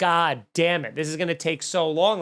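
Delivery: normal talking voice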